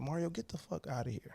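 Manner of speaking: mock coach-style barked yelling, scolding. Retelling how a coach turned around and yelled: imitating someone yelling. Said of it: "yelled at me".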